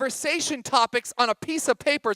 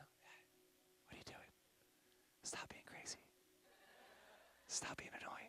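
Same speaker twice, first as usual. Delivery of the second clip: very soft, very quiet, hushed whisper; 3 semitones lower, 37 dB quieter than usual. Parent showing what they whisper to their loud kids; whispering. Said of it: "and I'll just start whispering".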